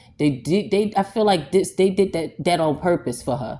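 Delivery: angry, stuttering, restarting, tripping over words. A speaker upset about what was done to her, stuttering. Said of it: "And I'm stuttering".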